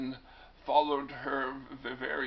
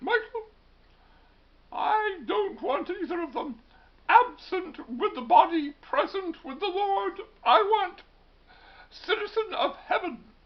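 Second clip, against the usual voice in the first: put-on British accent, very high and loud; 9 dB louder than usual. Speaker quotes what his mother would have said, in an attempted british accent. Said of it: "that's my attempt at a British accent".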